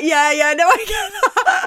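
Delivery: high-pitched, loud, laughing delivery.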